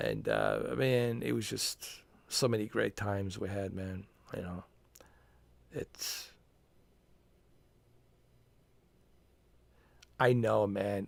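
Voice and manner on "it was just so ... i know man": trying hard not to cry, fighting back tears. Remembering great times with a friend, holding back tears. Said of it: "I'm trying not to cry".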